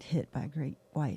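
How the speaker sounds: whispered speech. Retelling quietly telling a husband about a shark hit: imitating own past whisper. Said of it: "I whispered".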